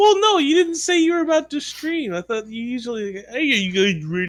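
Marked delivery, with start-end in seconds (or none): 3.3-4.3 mocking, stupid-sounding put-on voice. Mocking how another player opens a stream: imitating a friend's stupid voice. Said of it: "In that same stupid voice you have".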